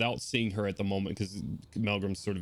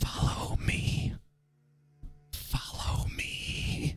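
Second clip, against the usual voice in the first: very slow, drawn-out, barely audible whisper. Voicing a woman asking the party for help, whispering. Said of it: "you're whispering too low".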